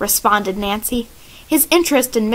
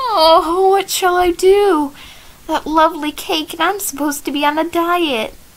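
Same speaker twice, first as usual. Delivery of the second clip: high, groaning, protesting tone; 6 semitones higher than usual. Offered refreshments while on a diet, the speaker responds, groaning in protest. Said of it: "brought a groan of protest from the plump Bess".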